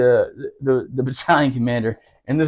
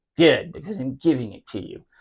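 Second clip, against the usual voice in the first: droopy old-cartoon hound voice; 4 dB quieter than usual. Retelling what the sergeant major told him when handing him the duty, Droopy impression. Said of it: "It was really like Droopy from the old cartoon".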